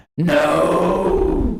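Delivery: high, loud, big dramatic movie-style shout. Acting out a movie line for others to guess, doing an impression. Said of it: "I did my best impression".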